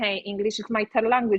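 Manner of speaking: ordinary talk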